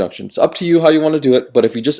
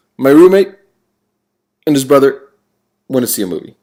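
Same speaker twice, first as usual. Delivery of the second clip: choppy, halting reading, pause at every comma; 4 dB louder than usual. Reading an example sentence aloud to show its commas, pausing at each comma. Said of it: "if I read this sentence with those commas there, it would sound like this: ... A lot of pauses there".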